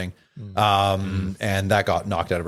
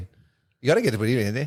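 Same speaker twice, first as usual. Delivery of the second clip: fake Canadian accent, much higher; 4 semitones higher than usual. Trying another impression after the group calls the last one awful, in a canadian accent. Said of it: "Was that dialect?".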